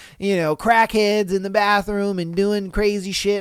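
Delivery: ordinary talk, nothing marked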